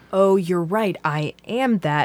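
ordinary delivery

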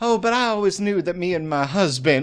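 high-pitched, affected, put-on Southern belle accent. Imitating a woman who starts affecting a southern belle accent. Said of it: "she starts affecting a Southern belle accent".

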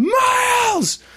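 very high, stretched-out, drawn-out shout. Retelling the scene where Owen looks at the camera: imitating Owen shouting. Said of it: "he's like".

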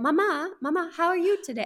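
put-on British accent with Kenyan tones. Parent raising kids in Mombasa imitates how the kids talk, in a Kenyan British accent. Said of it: "They have these really funny Kenyan British accents".

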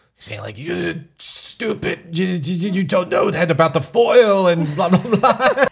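bad put-on English accent. Speaker retells a man insulting someone, in a bad English accent. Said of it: "You do a really bad English accent".

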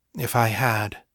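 soft, quiet, hushed delivery. Fiona answers a man who accused her of not telling him, quietly. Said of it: "she said quietly".

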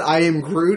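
plain

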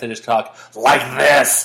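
slow, deliberate podcast-host voice.

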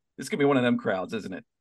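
normal talking voice

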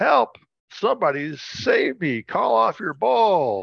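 mock panicked, high, terrified shout. Retelling an FBI agent chased by a bull shouting at him, retelling a terrified shout. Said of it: "He shouts at me".

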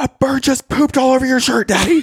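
put-on very high, freaked-out, panicked child's scream. A father retelling how his daughter Elle reacted to his shirt: imitating Elle's panicked scream. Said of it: "She was screaming, freaking out".

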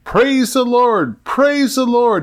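shrill, very high yelling. Telling a joke, voicing a rider urging his horse on: yelling. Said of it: "he yelled".

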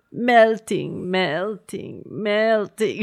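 despairing, distraught storybook witch-voice cry. Retelling how a woman kept repeating one word, in a Wicked Witch voice. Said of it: "she sounds like the wicked witch".

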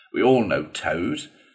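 plain reading voice

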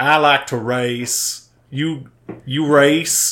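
put-on slow, heavy, drawn-out Alabama twang accent. Describing a character's hard twang, quoting his line: borderline offensive alabama accent. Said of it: "borderline offensive Alabama accent".

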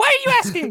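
very high, tiny put-on character voice. Playing a munchkin in a scene of only questions, in a Munchkin voice. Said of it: "[name]'s Munchkin voice is amazing".

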